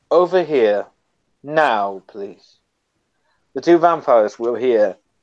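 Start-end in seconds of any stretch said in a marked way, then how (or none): 0.1-2.6 mild, gentle, courteous and polite tone. Narrating a character who turns and stares out into the night, in a soft voice. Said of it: "says in a soft voice".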